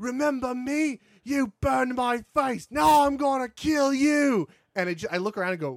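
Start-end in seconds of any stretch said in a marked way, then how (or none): 0.0-4.5 mock cocky English accent, much higher, slower. Retelling what an enemy captain in the game says mid-fight, imitating a cocky English accent. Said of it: "they all have the cocky English accent".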